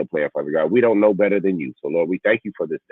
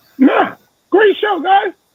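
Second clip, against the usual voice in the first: very high, raised put-on falsetto voice; 7 dB louder than usual. Answering the host's request for final words, in a high-pitched voice. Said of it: "In my high pitched voice".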